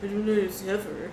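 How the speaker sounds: quiet grumbling mumble. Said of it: "you hear him mumble something about".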